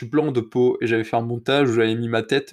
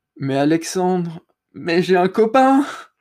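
put-on slow, pitched-up, slightly embarrassed, awkward tone; 7 semitones higher, 4 dB louder than usual. Retelling what a girl from his class answered him, imitating an embarrassed, smiling reply. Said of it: "un peu gênée mais avec le sourire quand même".

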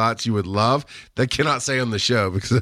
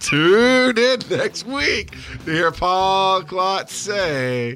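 really slow, stretched-out, drawn-out, pitched-up delivery; 8 semitones higher than usual. Podcast host throws the sign-off to klotz with a warning, really slow. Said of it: "I'm going to do it really slow".

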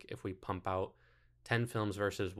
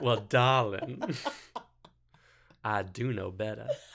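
raised, exaggerated Southern belle voice; 2 semitones higher, 7 dB louder than usual. Pointing out a voice that sounds like a big Southern lady, doing Blanche Devereaux voice. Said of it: "Blanche Devereaux".

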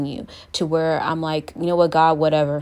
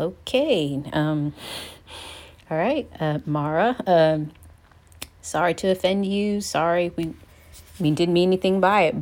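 plain

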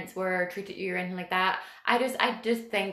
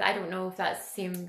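ordinary delivery

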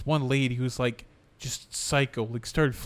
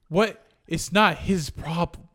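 put-on yelling, higher pitched; 5 semitones higher, 4 dB louder than usual. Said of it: "he yelled at him".

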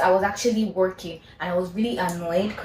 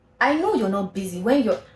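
mock firm, stern, serious no-joke tone; 3 semitones higher than usual. Retelling a caller's reply after being told she was busy: imitating a stern voice. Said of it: "His voice was quite stern".

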